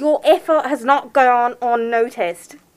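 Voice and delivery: put-on British accent drifting toward Australian. Reading a line in the accent they were assigned: attempted british accent. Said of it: "Was that Australian? No, it was British".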